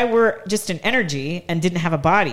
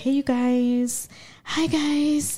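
mock timid voice, higher; 8 semitones higher, 3 dB quieter than usual. Imitating how the other speaker used to talk in posts: imitating someone timid. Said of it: "kinda timid".

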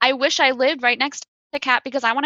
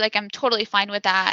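normal talking voice

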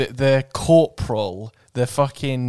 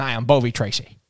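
put-on 1950s newsman voice. Riffing on a town name, the speaker mimics a reporter: 1950s reporter voice. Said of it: "That sounds like a 1950s like reporter".

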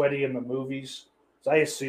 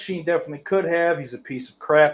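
ordinary talk, nothing marked

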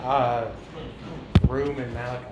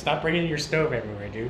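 ordinary talk, nothing marked

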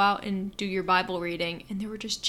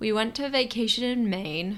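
voice breaking and cracking mid-sentence. Speaker telling a story about a trip with friends, voice cracking. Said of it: "My voice just cracked again".

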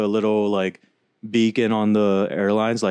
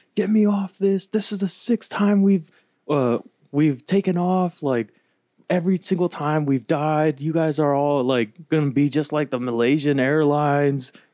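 mock panicked, freaking-out yelling rant; 6 semitones higher than usual. Retelling a video of a man on an airplane: retelling his yelling. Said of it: "he's yelling".

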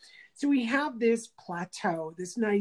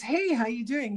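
put-on bright, breezy, all-cheer voice; 3 semitones higher than usual. Retelling how a man whose restaurant burned down greeted him; retelling a big-smile greeting. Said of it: "stands up with a big smile and goes".

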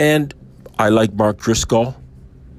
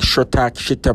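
put-on strange-sounding unintelligible babbling speech. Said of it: "It sounded like something very strange".

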